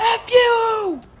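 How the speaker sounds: acted-out scream. Retelling a kindergarten memory of swearing at the mom from the back seat: retelling a scream. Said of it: "I screamed the F word".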